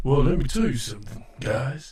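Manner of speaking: deep, smooth put-on voice. Imitating a friend greeting everybody: deep voice imitating Jay Manley. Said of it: "is this deep enough?".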